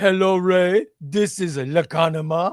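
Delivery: exaggerated, poorly done German accent. Mocking how Lacanama would talk to Ray: imitating Lacanama's German accent. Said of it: "Are you going to talk to me like this?".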